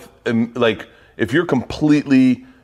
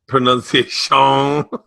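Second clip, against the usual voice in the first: put-on Cajun accent, higher and louder. Repeating a word while others comment, in Adam Sandler's Cajun Man voice. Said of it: "You're doing the Adam Sandler, Cajun man".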